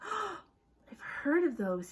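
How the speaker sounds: right after a gasp. Narrator reading Ron's line after he gasps, in a hushed voice. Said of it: "he said in a hushed voice".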